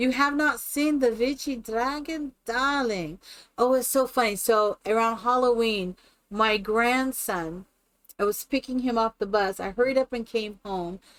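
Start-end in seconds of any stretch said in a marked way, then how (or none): 0.0-3.2 put-on invented witchy accent, part Czech, part Korean. Performing the made-up accent of the witchy dragon: made-up witchy dragon accent. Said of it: "this accent that I do".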